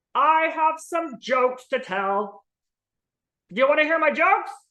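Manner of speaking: high, jokey, put-on puppet voice. A puppet offering to tell jokes, in a joke-telling puppet voice. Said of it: "Hi, I'm [name], like the sauce".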